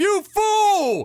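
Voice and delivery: shrill, very high, drawn-out shriek on fool. Retell what a man on a television episode screamed whenever the contestants messed up, imitating someone screaming. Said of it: "he'd scream".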